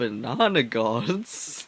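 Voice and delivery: low, baffled, puzzled double-take. Game master voicing a man the players just spoke to, confused. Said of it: "this guy looks very confused at you".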